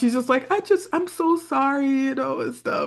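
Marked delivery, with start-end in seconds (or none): 0.5-1.9 put-on sweet apologetic voice, higher and quieter. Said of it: "She put on that same voice that she puts on for Daddy Damon".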